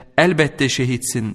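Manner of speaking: ordinary delivery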